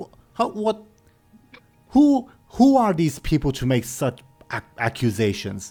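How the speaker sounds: stumbling, stammering over words. Voicing a character answering accusations before the village: flustered stuttering. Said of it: "by the way he's stuttering".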